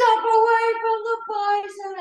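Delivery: shrill, very high, drawn-out top-of-the-lungs yell. Retelling a warning shouted to a mother near the bison, retelling a yell at top of lungs. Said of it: "I'm over here yelling".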